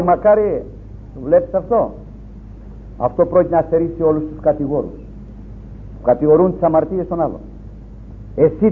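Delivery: ordinary delivery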